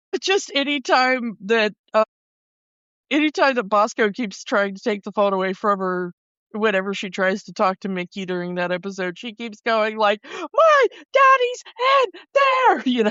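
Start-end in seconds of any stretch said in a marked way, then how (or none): 10.2-12.8 tearful cry, very high-pitched and very drawn out. Retelling an episode where a little girl keeps crying: imitating a crying girl. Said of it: "keeps crying".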